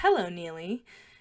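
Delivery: normal talking voice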